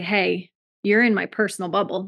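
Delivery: plain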